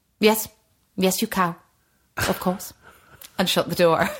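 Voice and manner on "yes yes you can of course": dismissive, brush-off drama teacher voice. Imitating a former drama teacher replying at his door: imitating Sean Holly. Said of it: "you do a very good impression of Sean Holly".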